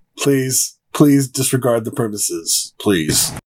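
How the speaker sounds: low, robotic cop voice. Suggesting a voice for telling people to leave: RoboCop voice. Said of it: "Like RoboCop".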